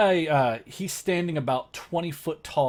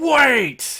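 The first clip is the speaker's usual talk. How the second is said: booming, very loud, very high snarl, "wait" drawn out; 11 semitones higher, 9 dB louder than usual. Game master voicing a voice heard as a player reaches to touch a sphere, booming snarling voice. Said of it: "a booming voice that snarls and goes".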